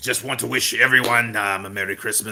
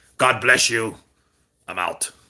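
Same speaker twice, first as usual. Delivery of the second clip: put-on British boxer voice. Doing a Christmas greeting as Tyson Fury: Tyson Fury impression. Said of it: "Here's Tyson Fury".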